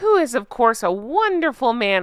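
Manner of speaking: heavy, dry sarcasm laid on thick. Speaker recounts what a woman said in an introduction at an event: sarcastic. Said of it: "I hope you can hear the sarcasm in my voice".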